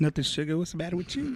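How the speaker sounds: slick, smooth, sweet-talking pimp voice. Joking with friends on a podcast, answering a question: pimp voice. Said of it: "I heard the way your voice changed".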